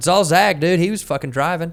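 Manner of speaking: put-on southern US accent. Retelling own words to the cops after being pulled out: southern accent. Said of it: "I had this southern accent".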